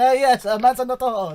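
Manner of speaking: put-on loud, high-pitched old man's voice. Imitating the old man sitting in the kitchen: imitating Mario. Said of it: "He sits in the kitchen going".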